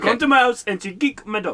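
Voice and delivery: Indian accent impression. Retelling a funny scene others should go watch, in a put-on indian accent. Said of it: "It's totally an Indian".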